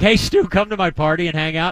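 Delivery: ordinary delivery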